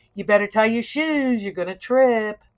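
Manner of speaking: loud, quick, sarcastic tone. Recounting a freshman suitemate's remark about an untied shoe, retelling a sarcastic warning. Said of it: "in a sarcastic way".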